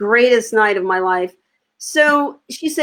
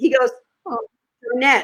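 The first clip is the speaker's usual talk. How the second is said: normal talking voice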